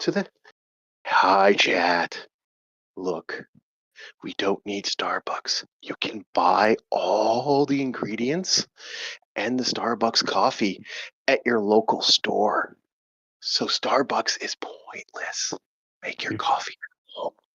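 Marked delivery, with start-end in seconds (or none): 1.0-17.3 slow, soft ASMR whisper. Telling chat to skip starbucks and make coffee at home: whispering. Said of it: "I'm gonna whisper".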